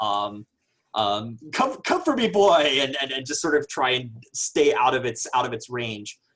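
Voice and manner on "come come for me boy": loud, high-pitched taunting in bullfighter style. Acting out a character goading a creature, matador-style: taunting like a matador. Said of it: "I like the Matador idea is I just start saying".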